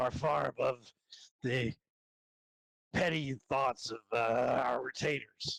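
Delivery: put-on halting drunken voice, breaking off mid-phrase. Narrating a game scene, voicing a character in a drunken voice. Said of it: "he says in a drunken voice".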